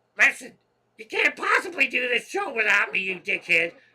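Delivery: booming, loud, high put-on cartoon voice. Voicing Sparky from an internal dialogue, in Sparky cartoon voice. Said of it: "a cartoon character voice to Sparky ... Sparky would be doing like this".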